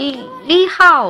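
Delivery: bad mock Sichuan/Chongqing accent, slow, high, loud. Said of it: "然后一听完全不对".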